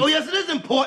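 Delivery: plain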